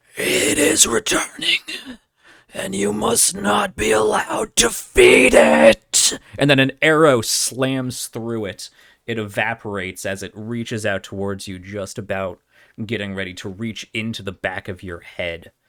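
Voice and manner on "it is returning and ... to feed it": ghostly gasping scream, pitched way up, rough-edged. Voicing a ghostly specter reaching toward a player: gaspy scream. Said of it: "it speaks in this gaspy scream".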